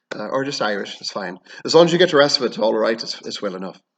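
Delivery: plain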